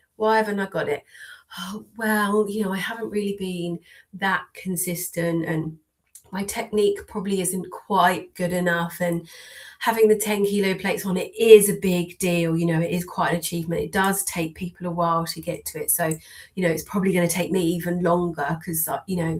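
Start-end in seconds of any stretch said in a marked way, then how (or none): none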